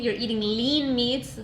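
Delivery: lean said slowly and heavily stressed.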